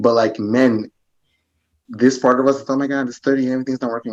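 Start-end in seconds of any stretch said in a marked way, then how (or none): 2.7-4.1 put-on male voice suppressing worry. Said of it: "suppress that shit".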